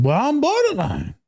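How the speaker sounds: very high, put-on Southern accent. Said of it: "why she got a southern accent".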